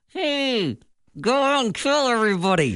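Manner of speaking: high ventriloquist dummy voice through gritted teeth. Showing how a ventriloquist works, the speaker voices the dummy: clenched-teeth ventriloquist dummy voice. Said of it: "You're clenching so hard".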